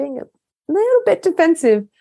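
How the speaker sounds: put-on very high, mild, gentle voice. Retelling how she points out defensiveness: imitating a gentle, smiling tone. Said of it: "she'll say very gently and she'll smile at me".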